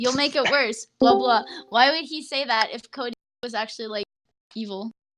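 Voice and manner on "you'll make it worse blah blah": ordinary delivery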